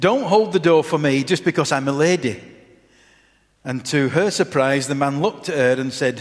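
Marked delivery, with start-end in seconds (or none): 0.0-2.4 mock very stern, severe, reproachful tone. Telling a story, speaker acts out a young feminist's reply to a man, retelling a very stern remark. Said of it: "she said in a very stern voice".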